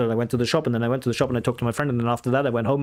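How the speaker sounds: fast, unbroken run-on delivery with no pauses. Showing run-on speech with no pauses between clauses: fast, no pauses. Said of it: "you speak like this".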